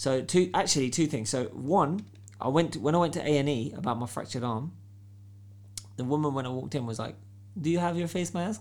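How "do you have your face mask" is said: put-on Filipino accent, higher, faster. Retelling what a woman at A&E asked on arrival, imitating a Filipino accent. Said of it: "What accent is that?".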